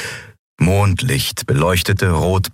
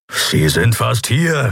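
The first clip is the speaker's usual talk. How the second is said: slow, grumbling, drawn-out words; 4 semitones higher than usual. Standing behind a woman as cultists approach, a companion speaks, grumbling. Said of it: "brummte Kero".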